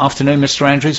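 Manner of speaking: ordinary delivery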